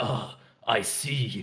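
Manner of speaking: slow, ominous character voice.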